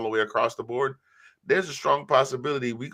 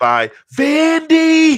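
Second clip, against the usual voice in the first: belted out loud with words stretched long; 13 dB louder than usual. Saying who beat Bama, imitating Uncle Lou. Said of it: "this is my best Uncle Lou impersonation".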